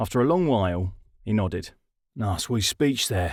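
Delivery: ordinary delivery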